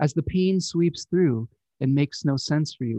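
ordinary talk

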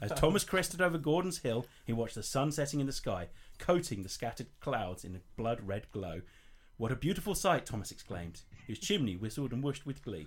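plain

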